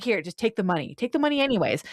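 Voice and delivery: play-acted, extreme passive-aggressive, heavily guilt-laden, pointed delivery. Retelling a show scene where a dad hands over money: imitating passive aggressive dad. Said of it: "an extreme level of passive aggressive".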